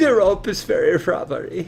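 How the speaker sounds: bad fake German accent, soft and high. Urged to try saying the word rubbery, trying it in a german accent. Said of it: "rubbery in a German accent".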